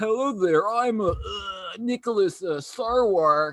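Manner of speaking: acted drunk voice, slow, hesitant, halting. Retelling a club story, imitating drunk Nicholas Sarwark introducing himself. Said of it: "man comes up to me, you know, drunk".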